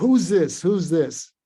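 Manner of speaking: loud, frightened, scared voice. Retelling how she grabbed the phone away and asked who it was: imitating a scared demand. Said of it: "she got scared and she".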